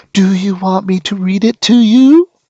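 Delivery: put-on very high, slow, condescending toddler-talk voice. She bends over to ask him, in a voice for talking to a four-year-old. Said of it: "in a voice normally reserved for talking to a four year old".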